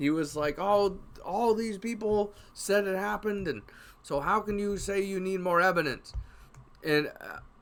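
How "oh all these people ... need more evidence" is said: irritated, indignant, angry and high-pitched. Retelling a gamer's reply in an argument about evidence: imitating someone angry. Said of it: "he got real pissed at me".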